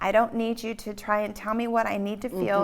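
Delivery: plain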